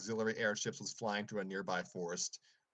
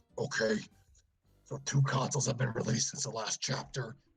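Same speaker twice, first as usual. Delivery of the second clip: big, raised, loud, booming storybook villain voice; 5 dB louder than usual. Reading a story aloud, voicing Bowser: Bowser voice. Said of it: "let me try my Bowser voice".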